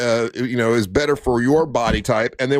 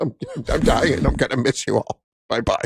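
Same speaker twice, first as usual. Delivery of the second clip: mock crying, fake sobbing. Imagining calling the others after a health scare: mock crying. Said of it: "calling you guys crying, going".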